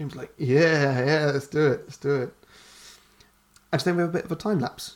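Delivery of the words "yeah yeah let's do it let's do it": put-on stoned-sounding, agreeable voice. Retelling a movie scene, voicing James: stoned James Franco voice. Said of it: "James Franco High voice".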